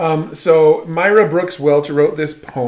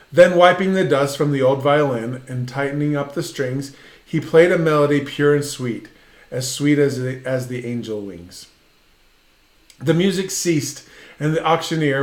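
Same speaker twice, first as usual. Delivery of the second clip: ordinary delivery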